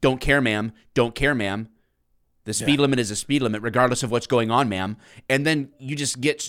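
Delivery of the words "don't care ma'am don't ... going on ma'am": put-on robotic voice. Retelling a traffic stop, the speaker plays the unsympathetic cop, imitating a robotic cop. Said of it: "You don't want a guy that's a robot".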